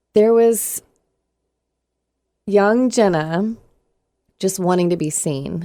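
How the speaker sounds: voice close to tears, on the verge of crying. Asked about the emotions she feels right now, near tears. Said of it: "going to make me cry".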